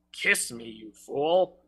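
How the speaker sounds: strong, deep, romantic voice, dropped low. Reading a comic poem aloud, voicing Brock: strong, deep voice. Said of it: "In his strong, deep voice".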